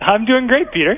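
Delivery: cheerful. A caller on Wait Wait Don't Tell Me answers host Peter, sounding happy. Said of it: "You sound so happy".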